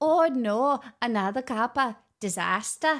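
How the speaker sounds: slow, laid-on fake Scottish accent. Talking to chat while opening gifts: put-on scottish accent. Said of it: "this is such a good accent".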